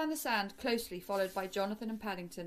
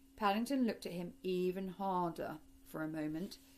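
ordinary delivery

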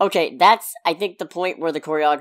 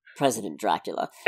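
put-on smarmy voice, lower and quieter; 8 semitones lower, 6 dB quieter than usual. Retelling a character's reply to a question: imitating a smarmy reply. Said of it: "he just replies with the smarmiest".

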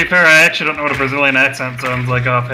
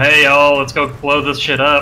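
put-on southern drawl accent. Joking about how the game's characters might sound: put-on southern accent. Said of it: "I don't get any southern".

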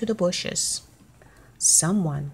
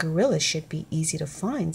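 plain reading voice

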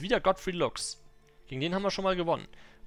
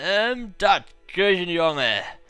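put-on loud, slurred drunken speech; 7 dB louder than usual. Narrator voicing a drunk peasant throwing his cup, slurred drunk voice. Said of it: "lallt einer der Betrunkenen".

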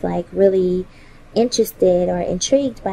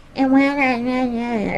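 put-on high baby-talk voice, "not" drawn out; 5 semitones higher than usual. Recalling the weird voice Christopher would do, Christopher's babyish voice. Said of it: "He would do this weird, like, babyish voice".

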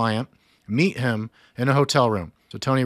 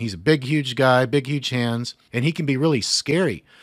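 plain

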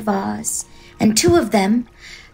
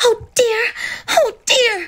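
very high, drawn-out, dismayed outcry; 14 semitones higher than usual. Dorothy sees feet sticking out from under the house, crying out in dismay. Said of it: "cried Dorothy, clasping her hands together in dismay".

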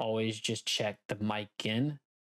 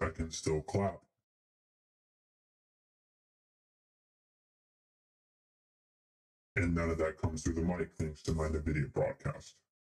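deep, processed electronic monster voice effect; 5 semitones lower than usual. Streamer demonstrating voice effects to viewers, now in a monster voice. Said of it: "And now I'm in a monster".

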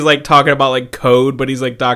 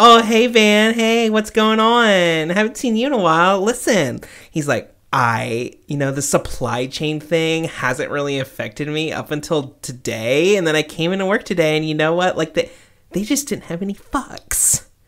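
put-on corny voice, higher pitch; 4 semitones higher than usual. Retelling a coworker's joke overheard at work: imitating a coworker who sounds like Doctor Xavier. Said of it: "he sounds just like him".

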